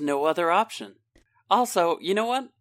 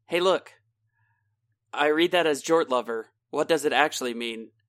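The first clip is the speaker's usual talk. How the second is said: ordinary talk, nothing marked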